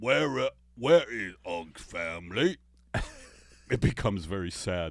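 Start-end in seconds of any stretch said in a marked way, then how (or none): 0.0-2.6 put-on caveman voice. Joking about how early humans spoke before language, caveman impression. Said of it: "Here's my impression of that".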